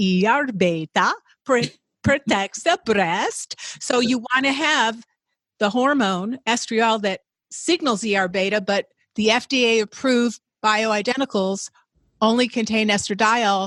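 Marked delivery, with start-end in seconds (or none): 0.0-3.6 put-on Swedish-accented English. Quoting a researcher the speaker worked with, Yanaki Gustafsson's Swedish accent. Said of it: "in his Swedish accent".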